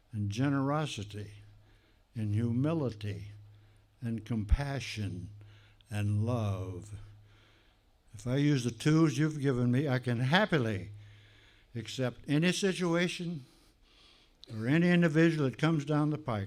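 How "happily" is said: leaning on the word happily. Speaker giving a talk, stressing the word happily. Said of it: "And I emphasize the word happily".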